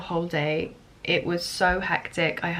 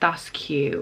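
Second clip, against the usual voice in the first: put-on talking-down, patronizing, condescending tone; 3 semitones lower than usual. Retelling what a friend of a friend said at a birthday: imitating a condescending tone. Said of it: "a condescending, like, trying to be patronizing way".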